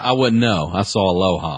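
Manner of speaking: irritated, resentful, angry delivery. Answering whether a scene happens in the movie, angry tone. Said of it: "So much anger in your voice".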